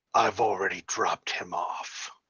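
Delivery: low, soft, horribly malevolent, menacing voice. Narrating a game, voicing an unseen voice the players hear, horribly malevolent voice. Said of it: "you hear a horribly malevolent voice".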